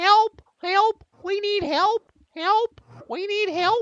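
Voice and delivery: very high, loud, screeching parrot cries. Voicing a caged parrot in the rubble: parrot screaming for help. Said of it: "the parrot is screaming".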